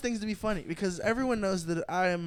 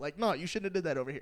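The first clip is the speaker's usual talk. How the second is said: plain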